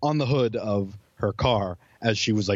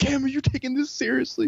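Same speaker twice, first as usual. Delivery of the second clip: acted, very high, fed-up yell, losing it. Retelling how a girl lost it on someone; imitating someone losing it. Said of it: "she just like lost it on Cam".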